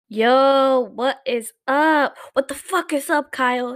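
brash, aggressive, in-your-face delivery with drawn-out "yo". The host opens the show with an aggressive intro. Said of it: "That was a little too aggressive".

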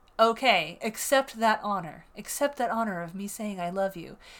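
said with sarcasm. Speaking to the audience: sarcastic. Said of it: "I'm being sarcastic right now".

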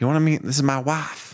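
put-on Southern accent. Retelling a story about a man, quoting him in a put-on Southern accent. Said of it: "you do his voice really well. It's that kind of Southern".

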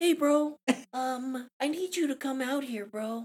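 very high-pitched, squeaky jock bro voice. Retelling a football player knocking at the door, imitating his high-pitched voice. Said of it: "he has a really high-pitched voice".

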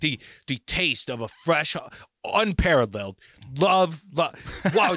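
mock hollering at full tilt, drawn-out, high and loud. Retelling how a guy in a grocery store insulted shoppers: imitating someone yelling. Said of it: "and he, like, yells at you".

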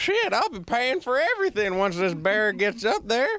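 high-pitched mock child voice with a southern accent.

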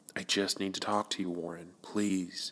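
hushed, soft tone. Narrating a story, Edward speaks to Warren in a hushed tone. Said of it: "Edward says in a hushed tone".

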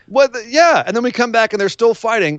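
usual speaking voice

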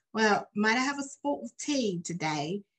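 attempted, put-on English accent. Describing quoting English movies around the house, attempting an English accent. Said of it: "attempting to use the accent".

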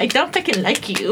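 plain

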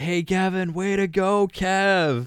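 slow, loud, high shout, one word held long. Retelling how a kid yelled out of the car: imitating someone yelling.

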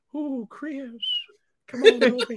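high-pitched, cartoonish character voice. Voicing an old man's imagined thoughts: voice of the Family Guy guy. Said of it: "the guy from, uh, Family Guy here".

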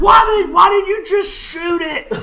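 very high, shrieked, drawn-out scream. After a shot is fired, a character demands why someone shot, screaming. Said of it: "Michael screams".

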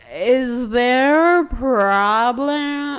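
put-on acted, very slow, slurred drunk speech. Retelling how a very drunk woman confronted them, imitating drunken slurring. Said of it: "slurring her words".

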